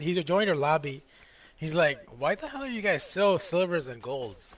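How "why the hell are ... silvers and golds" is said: normal talking voice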